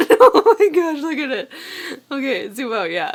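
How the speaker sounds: laughing while talking. Showing a finished crocheted cow, laughing while talking. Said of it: "Sorry, I can't stop laughing".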